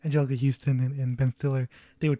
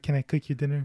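feigned weak timid voice. Describing a film role, imitating Bill Murray's character: weak and meek. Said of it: "he's very much the weak".

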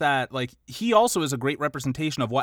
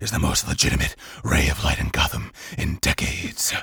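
bad, gruff, growled superhero voice; 12 semitones lower than usual. Quoting a film line to the other speaker: Batman voice. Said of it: "That fucking Batman voice".

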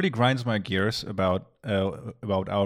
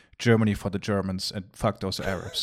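plain

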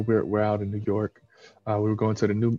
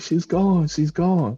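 mock high, slow, stretched-out scream; 8 semitones higher, 4 dB louder than usual. Retelling the younger sister's phone call: imitating sister screaming. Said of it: "She was just screaming".

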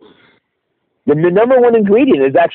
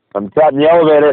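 ordinary talk

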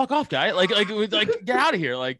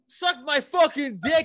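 high, mild, crude heckling yell; 6 semitones higher than usual. Recounting how Kyle yelled out in the room: retelling Kyle's yell. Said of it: "he yells it out".

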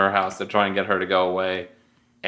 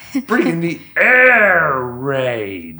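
loud, swooping, animated cartoon voice, air drawn out; 7 semitones higher, 6 dB louder than usual. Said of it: "That was a good ass impression".

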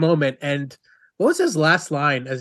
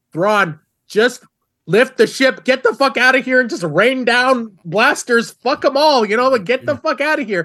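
put-on, high, loud, all-out screaming; 9 semitones higher, 5 dB louder than usual. Retelling screaming at the tv during an episode: imitating own screaming at tv. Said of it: "I was screaming at my T V".

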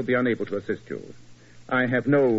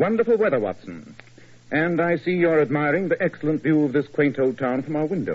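ordinary delivery

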